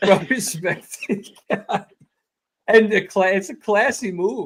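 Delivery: holding back a laugh. A podcast host talking about Micheletti, trying not to laugh. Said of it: "I'm trying not to laugh".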